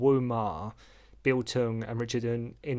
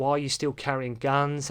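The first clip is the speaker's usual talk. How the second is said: ordinary talk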